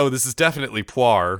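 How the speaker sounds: normal talking voice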